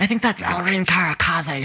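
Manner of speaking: hushed whisper. A game master voices a character whispering to a player; whispering. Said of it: "And she's like whispering to you".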